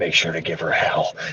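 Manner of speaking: whispering. Retelling what was whispered to a newborn so her mom won't hear: retelling own whisper. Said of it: "I whispered to her".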